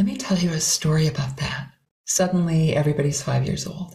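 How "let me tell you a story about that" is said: airy, breathy storytelling voice full of wonder. Showing how starting a story sounds after talking in a regular voice: air voice. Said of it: "this is how my air voice sounds".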